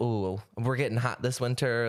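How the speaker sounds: ordinary delivery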